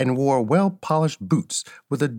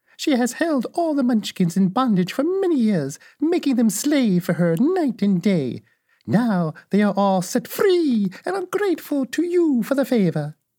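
very high, sweet, calm voice; 10 semitones higher than usual. Narrator reads the little woman answering Dorothy, in a sweet voice. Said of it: "But the little old woman walked up to Dorothy, made a low bow, and said in a sweet voice, ... and said in a sweet voice".

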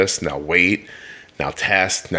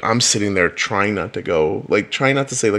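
ordinary talk

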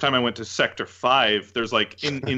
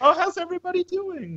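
put-on sweet voice, higher. Retelling a game scene after the characters knock over chairs: imitating Aerith's very sweet line. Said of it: "very sweet line".

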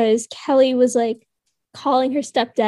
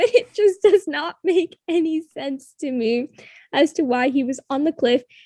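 chuckling, talking through laughter; 3 semitones higher than usual. Discussing a confusing plot point with another speaker, laughing while talking. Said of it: "I'm laughing again".

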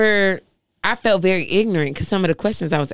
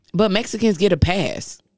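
ordinary delivery

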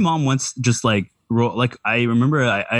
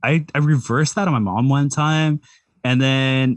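usual speaking voice

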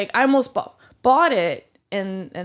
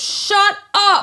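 mock, loud, very high, raised outburst; 12 semitones higher, 5 dB louder than usual. Retelling what was said back to the server: imitating saying it loud. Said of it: "I kinda s-, s-, said it loud".

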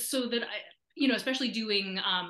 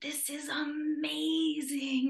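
"amazing" pitched up and drawn out; 7 semitones higher than usual. Retelling what a celebrity said on seeing the speaker's original, in a LeVar Burton-like voice. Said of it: "in that LeVar like voice".

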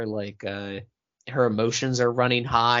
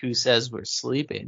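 ordinary talk

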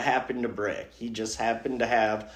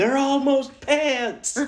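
mock screaming, pitched higher; 4 dB louder than usual. Acting out a psycho in pajamas thrown in a police car: imitating someone screaming. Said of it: "thrown in the police car screaming".

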